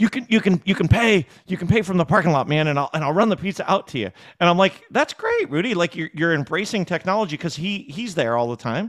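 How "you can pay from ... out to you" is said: put-on excitement, much higher pitch. Recalling a pizza shop owner's new point-of-sale feature, imitating someone excited. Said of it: "he was all excited".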